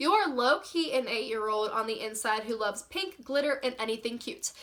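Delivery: plain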